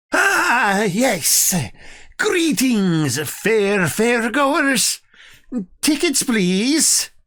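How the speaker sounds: put-on elderly goblin voice, pitched very high and slow. Voicing a goblin at a ticket booth greeting fairgoers: elderly goblin voice. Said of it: "elderly goblin that is sitting behind the ticket booth".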